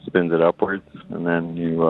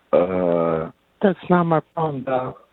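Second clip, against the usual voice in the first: put-on female voice, much higher; 7 semitones higher than usual. Asked to record a line for the app's female version, put-on woman's voice. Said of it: "could you say one in a woman's voice".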